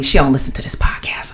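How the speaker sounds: unvoiced, secretive whisper.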